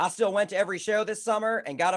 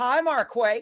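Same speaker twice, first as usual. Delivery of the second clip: mocking, teasing put-on voice, higher pitch; 5 semitones higher, 3 dB louder than usual. Retelling how the boss greets with a misprinted name: imitating boss Masha's teasing greeting. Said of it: "She's always like".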